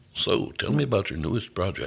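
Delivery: canned, stock radio announcer voice. Imitating how the older interviews sounded: radio voice. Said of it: "it's almost the radio voice going".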